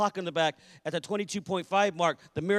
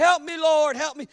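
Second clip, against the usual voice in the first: very high, loud, wailing pleading cry; 9 semitones higher, 6 dB louder than usual. Retelling people in a dark sanctuary crying out, imitating people crying out. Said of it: "And they're crying out".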